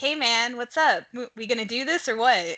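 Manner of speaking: put-on slow, pointed, passive-aggressive nagging. Imitating own past nudging about the show: mock passive-aggressive tone. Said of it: "but you really mean passive aggressive".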